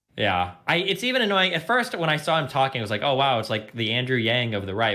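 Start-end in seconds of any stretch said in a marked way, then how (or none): none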